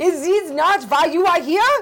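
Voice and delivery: very high, fake Swedish accent. Reading a movie quote in a drawn accent: put-on Swedish accent.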